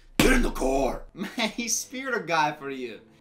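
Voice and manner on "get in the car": put-on deep, loud demon voice. Repeating what a man just said, in his demon voice. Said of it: "he went back into his demon voice".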